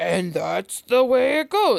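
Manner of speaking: loud, creaky, dumb, dim-witted dopey voice. Mocking a sudden voice switch in duet audiobooks, deep, stupid voice. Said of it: "like some deep, stupid voice".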